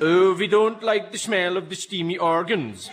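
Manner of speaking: loud, high, silly mock Swedish accent.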